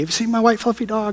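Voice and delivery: play-acted, upset, distraught, tearful pleading tone. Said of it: "she was just totally distraught".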